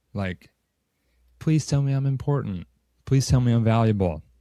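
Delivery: getting emotional. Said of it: "I will get emotional again".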